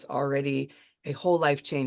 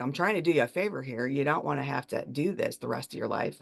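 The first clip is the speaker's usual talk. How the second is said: put-on dead-serious, curt, unkind voice. Retelling what a neurologist told her at the hospital: imitating a dead serious doctor. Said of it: "dead serious and really not nice".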